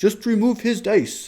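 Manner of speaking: bad, sloppy German accent, very high-pitched. Imitating Bassmaster's voice in the back of the head: imitating Bassmaster in German accent. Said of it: "That's not even a good German accent at all".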